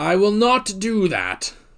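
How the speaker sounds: very slow, drawn-out delivery with swooping pitch. Retelling what the dragon said when asked for a cure: John Hurt impression. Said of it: "That's my best John Hurt impression".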